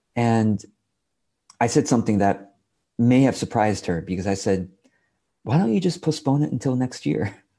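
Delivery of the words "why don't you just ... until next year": amused, light, offhand delivery with chuckling. Retelling his reply to a woman asking how to fit it all in: retelling with a chuckle. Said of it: "I say that with a chuckle".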